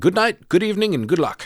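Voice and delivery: put-on English accent, very high. Recapping a story, voicing Carlos as he speaks to Aiden: Carlos's English accent. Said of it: "speaks with an English accent for some reason".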